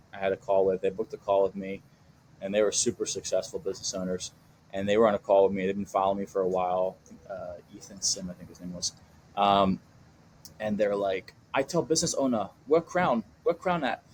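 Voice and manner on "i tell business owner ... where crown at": put-on Hong Kong accent, pitched up. Retelling what business owners in Hong Kong said: imitating a Hong Kong accent. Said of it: "I'm kinda trying to do their accent".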